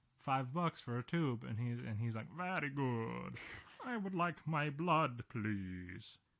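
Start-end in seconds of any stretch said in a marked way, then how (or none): 2.4-6.2 very slow vampire voice, every word drawn out. Imagining a lab returning tested blood, the customer asks for it back, Dracula voice. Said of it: "here you go, Dracula".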